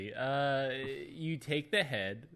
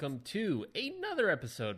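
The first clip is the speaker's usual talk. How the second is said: slight break, voice cracking a little; 5 semitones higher than usual. Podcast host opening another episode: voice cracking. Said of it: "My voice cracked a little bit".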